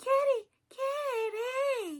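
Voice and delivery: put-on very high, tiny toddler voice, "kitty" drawn out. Describing the three-year-old character Boo from the film, doing a Boo impression. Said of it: "That's my little impression of her".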